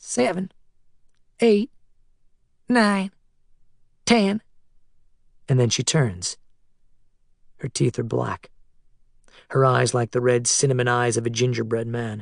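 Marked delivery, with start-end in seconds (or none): 0.0-4.4 high, flat, crackly machine-like robot voice. Narrating a boy watching his mom count to ten, in a crackly, robotic voice. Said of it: "She counts to ten in a crackly, robotic voice".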